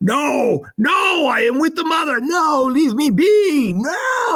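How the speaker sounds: very high, drawn-out screaming and bellowing. Voicing a transformed creature pulled from water: screaming and bellowing. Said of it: "he begins screaming and bellowing".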